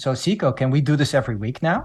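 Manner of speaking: seductive, put-on French accent. A podcast host retells what his guest said after her episode: Virginie's sexy French accent. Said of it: "she said in her sexy French accent".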